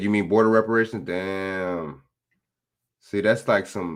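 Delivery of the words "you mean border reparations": ordinary delivery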